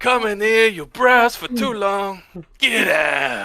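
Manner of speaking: put-on Italian accent. Improvising a shop owner character with the group: Italian accent. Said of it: "Italian accent".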